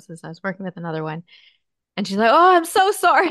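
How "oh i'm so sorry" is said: very loud, very high, shrill voice. Retelling how she apologized while clients were in session: retelling a really loud apology. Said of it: "still like really loud".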